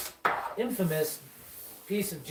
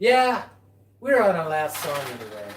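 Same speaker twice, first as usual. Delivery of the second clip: deadpan, dead straight, pitch dropped low; 5 semitones lower than usual. Telling a story, speaker acts out a friend's reply, retelling a friend's deadpan. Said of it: "my friend goes deadpan to his face".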